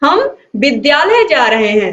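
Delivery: emphasis landing on विद्यालय. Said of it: "हमने क्या किया विद्यालय पर बल दिया".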